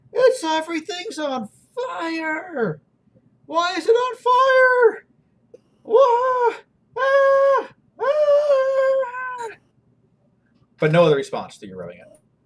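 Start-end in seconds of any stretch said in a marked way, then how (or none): 0.1-9.4 shrill, very high-pitched, very slow drawn-out screams. Narrating a scene, the speaker voices a creature inside a lamp: shrill screaming voice. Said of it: "shrill voice screaming".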